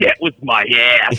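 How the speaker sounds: put-on strange, weird New England accent, low. Retelling a story, quote what Perdenny said back to Groves: Perdenny's weird New England accent. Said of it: "in this weird fucking New England accent goes".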